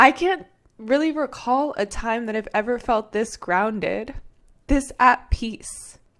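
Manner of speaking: voice on the edge of tears, teary and emotional. Sharing a personal experience with listeners, tearing up. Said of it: "I'm like tearing up right now".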